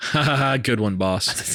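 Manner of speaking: slow, dopey, mocking, sarcastic ha-ha-ha laugh. Acting out how he laughed at his boss before he got up and left, imitating a goofy, sarcastic laugh. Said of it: "a goofy ass, ... the sarcastic, you're an asshole laugh".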